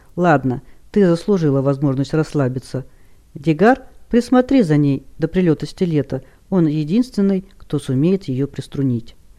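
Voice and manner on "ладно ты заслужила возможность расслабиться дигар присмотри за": usual speaking voice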